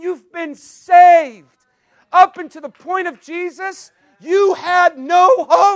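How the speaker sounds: slow, loud, drawn-out, fervent preaching yell. A speaker addressing a group about the gospel: yelling. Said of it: "Sorry, I'm yelling".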